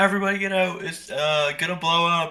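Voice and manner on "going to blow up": ordinary talk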